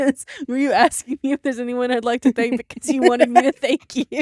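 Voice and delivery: talking through laughter. Reacting to what the other speaker just asked, laughing while talking. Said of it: "I'm just laughing".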